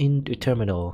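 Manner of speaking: plain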